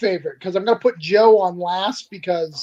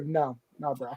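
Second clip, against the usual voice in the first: put-on stern, matter-of-fact tone, lower, quieter; 5 semitones lower, 13 dB quieter than usual. Speaker imitates how a tattoo artist answers customers: mock-stern, matter-of-fact. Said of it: "like matter of fact voice".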